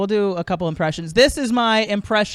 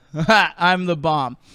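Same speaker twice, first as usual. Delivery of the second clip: put-on proud boastful voice, lower; 3 semitones lower than usual. Speaker does an impression for people behind the camera: mock-proud terrorist impression. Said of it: "a terrorist who's really proud of himself".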